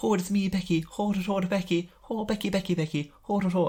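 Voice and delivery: put-on bad Irish accent. Retelling a commentator's bad Irish accent: imitating Regal's bad Irish accent. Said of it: "does a shit Irish accent".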